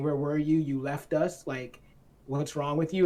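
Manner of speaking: ordinary delivery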